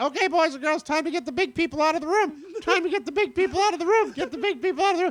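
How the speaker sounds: imitated cheerful clown host voice. Retelling a clown's kids' show bit: imitating a kids' show clown host. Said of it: "he's doing a kid's show".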